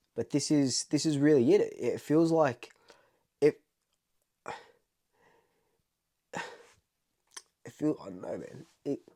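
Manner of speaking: high, tearful crying voice, stumbling over words. Speaker making a big call about winning the premiership, crying. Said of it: "I don't even know why I'm crying".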